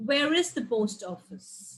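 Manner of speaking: pitch falls at the end on "office". Intonation lesson, a WH question example: falling at the end on office. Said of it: "in the end, it goes down".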